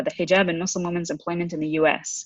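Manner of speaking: ordinary talk, nothing marked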